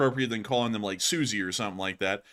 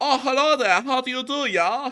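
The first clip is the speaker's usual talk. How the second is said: high, put-on German accent; 13 semitones higher, 4 dB louder than usual. Picturing what a quintessential German would sound like: imitating a stereotypical German. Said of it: "would you imagine someone who would go".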